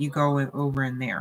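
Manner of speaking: ordinary talk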